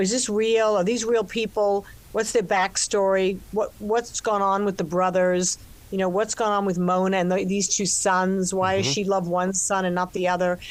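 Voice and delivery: ordinary talk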